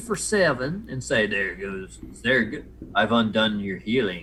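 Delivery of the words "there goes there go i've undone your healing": strange, weird, otherworldly alien creature voice. Voicing a creature gloating over a player's lost healing: weird alien voice. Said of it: "he says in a weird alien voice".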